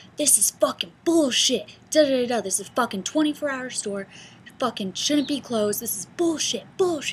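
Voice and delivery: furious, yelling, cursing angry rant. Retelling an angry customer flipping out at closing time: imitating a customer yelling. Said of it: "flips the fuck out".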